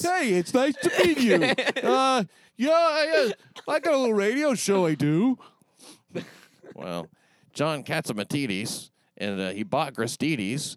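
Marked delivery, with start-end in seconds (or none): 0.1-5.4 very high, loud, squeaky puppet-like voice. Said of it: "He sounds like a Muppet almost".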